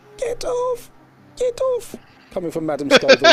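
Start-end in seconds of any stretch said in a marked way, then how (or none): 0.2-2.0 barely audible, very faint, very high voice. Voicing a sleeping character heard faintly from afar: very faint voice. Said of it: "you hear a very faint".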